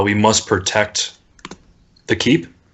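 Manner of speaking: flat, toneless phantom voice, low, completely monotone drone. The narrator voices the Phantoms as they begin to move: completely monotone phantom voice. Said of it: "they have a completely monotone voice".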